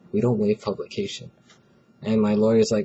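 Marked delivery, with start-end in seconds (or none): 0.1-1.3 dead-straight, soft, flat, expressionless deadpan. Retelling how a man answered the lawyer's request, imitating a deadpan reply. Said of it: "He like deadpanned".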